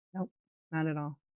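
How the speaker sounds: put-on very soft, quiet, relaxed, calm voice. Retelling the creator's answer to her question, imitating a calm, chill voice. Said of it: "in the most calm, chill voice".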